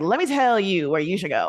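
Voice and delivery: animated voice, widely swinging, swooping pitch. Retelling advice about where to go, in an Amanda Seales impression. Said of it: "That's my Amanda Seales impression".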